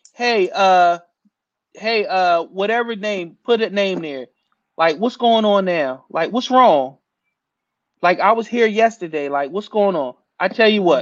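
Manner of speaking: normal talking voice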